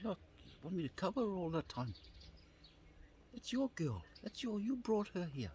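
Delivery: high, exasperated pushback. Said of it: "it got to the point where I'd say".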